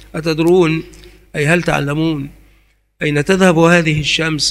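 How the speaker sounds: normal talking voice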